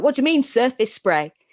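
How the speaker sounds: put-on sharp, snappish tone. Retelling how a boss answered a simple question: imitating boss snapping back. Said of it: "she just snapped back".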